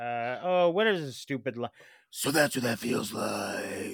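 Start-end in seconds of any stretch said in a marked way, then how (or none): 2.1-3.9 put-on gruff superhero voice, lower and quieter. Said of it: "And he does the".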